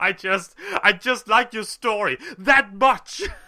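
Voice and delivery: laughing breathlessly. The audience answers her teasing, laughing breathlessly along with her. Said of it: "laughing breathlessly right along with her".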